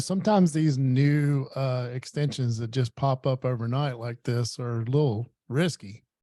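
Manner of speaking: sarcastic mock tone. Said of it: "that was sarcasm".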